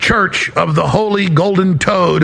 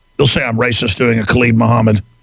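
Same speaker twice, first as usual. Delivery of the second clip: normal talking voice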